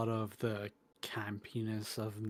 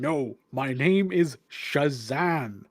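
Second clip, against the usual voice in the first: exasperated, frustrated wizard voice, very loud and slow; 3 semitones higher, 10 dB louder than usual. Voicing the wizard correcting someone's pronunciation: frustrated wizard. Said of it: "the wizard just getting so frustrated".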